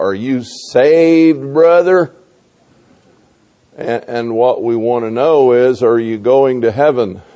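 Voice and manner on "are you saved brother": put-on southern drawl, stretching the word saved. Addressing listeners, imitating how people ask about being saved, in a southern drawl. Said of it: "with the southern drawl".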